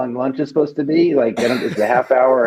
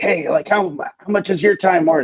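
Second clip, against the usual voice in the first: mock yelling, higher; 6 semitones higher than usual. Retelling a union rep yelling a question at them: imitating someone yelling. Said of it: "one's yelling at me".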